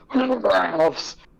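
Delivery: very high voice, gagging and retching. Imitating how she always said Ralph's, like she was vomiting. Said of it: "She would always say it like she was vomiting".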